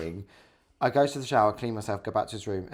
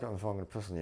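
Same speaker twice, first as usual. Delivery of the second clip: put-on mumble, quieter; 8 dB quieter than usual. Acting out a man's imagined reply from the floor: imitating someone mumbling. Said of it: "he's mumbled and gone".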